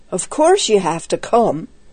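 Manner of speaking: plain reading voice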